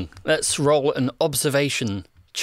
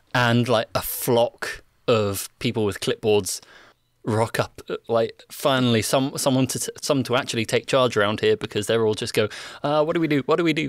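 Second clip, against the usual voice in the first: ordinary talk, nothing marked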